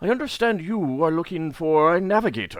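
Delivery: high, owlish creature voice. Voicing an unseen speaker addressing a player: voicing a talking space owl. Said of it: "speaks up and says".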